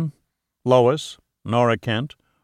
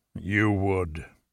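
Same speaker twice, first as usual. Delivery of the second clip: low, soft, grudging growl; 5 semitones lower, 8 dB quieter than usual. In a novel, a man answers the other speaker, growling. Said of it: "he growled".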